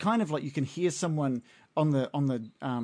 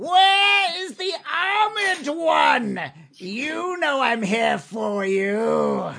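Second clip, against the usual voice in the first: shrill, very high, very loud shrieking yell; 13 semitones higher, 9 dB louder than usual. Billy Goblin kicks through the door, steps in, and calls out: Billy Goblin yelling. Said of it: "he steps in and he yells".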